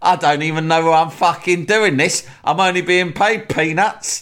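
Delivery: shrill, very high, angry, temper-lost outburst. Retelling a football manager's radio call: imitating Harry Redknapp losing his temper. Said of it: "he's lost his temper really quickly".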